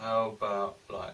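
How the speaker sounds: deliberately dragged, very slow, drawn-out, unhurried delivery. Trying out a slower way of talking: deliberately slow speech. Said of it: "it's too slow".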